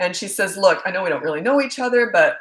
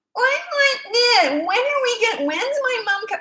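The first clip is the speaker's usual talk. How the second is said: put-on very high, whiny child voice. Retelling how she kept asking questions from the backseat, imitating a whiny voice. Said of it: "I don't even think she knows how she sounds".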